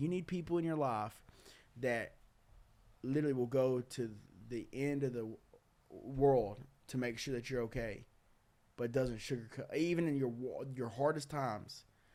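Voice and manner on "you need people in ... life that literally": plain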